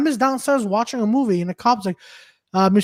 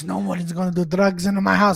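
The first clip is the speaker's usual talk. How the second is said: put-on Italian accent impression; 3 semitones lower than usual. Retelling what the next-door neighbor's dad told his kids, in a put-on Italian accent. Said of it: "He goes".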